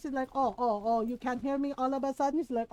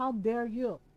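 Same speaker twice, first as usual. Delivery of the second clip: mock angry, offended, scolding voice; 2 semitones lower than usual. Retelling mom yelling at a relative for upsetting her daughter: imitating mom sounding mad. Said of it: "Your mom sounds mad".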